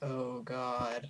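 quiet put-on monotone. Talking about Six with a friend, doing Six's flat monotone. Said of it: "Six keeps a perfect monotone even when".

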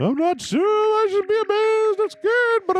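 very high, weird put-on voice. Reading a game character's lines aloud: voice like Paul Bearer. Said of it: "You sound like, uh, Paul Bearer of wrestling fame".

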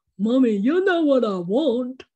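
loud talking-dog voice. Speaker recalls answering her dog at home, doing Porter's voice. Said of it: "he talks like this".

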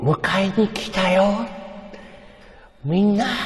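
put-on ship voice. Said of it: "ふざけて、バカにして、メリー号のアテレコ".

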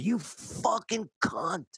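mock, very high, furious shrieking scream. Recounting running out to the sidewalk and screaming at her: retelling a scream. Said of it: "I'm screaming like neighbors are coming out".

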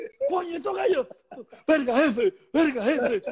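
startled yelping outburst.

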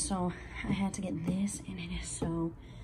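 hushed whisper.

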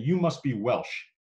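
put-on thick, broad, very heavy Brooklyn accent. Speaker retelling a woman's first words to them, Sally Newman's heavy Brooklyn accent. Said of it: "in a very heavy Brooklyn accent saying".

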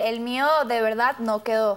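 plain

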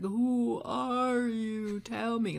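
very slow, drowsy, half-asleep dragged-out words. Speaker re-enacting talking to a man while waking up from a dream, very slowly. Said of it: "I was saying it so slowly in the hypnagogic state".

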